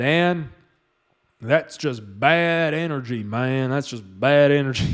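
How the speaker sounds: put-on Southern accent, man's voice. Retelling what a Southern healer said on a Zoom call: imitating a Southern guy. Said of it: "the super Southern guy, super Southern guy".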